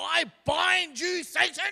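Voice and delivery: booming, very loud, very high, very slow, drawn-out, forceful voice. Describing Pentecostal prayer meetings, imitating someone binding Satan in that prayer voice. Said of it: "they always do it in that voice".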